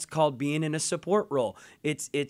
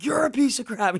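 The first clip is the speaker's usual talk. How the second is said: acted, furious, high-pitched angry shout; 9 semitones higher, 4 dB louder than usual. Recounting a confrontation with someone who interrupted, re-enacting an angry shout. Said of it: "I start shouting and I'm getting so angry".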